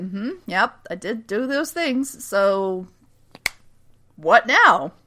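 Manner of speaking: slow, casual, unbothered, nonchalant delivery. Retelling a TV scene where the father answers: imitating a nonchalant reply. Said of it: "Samson's very, like, nonchalant".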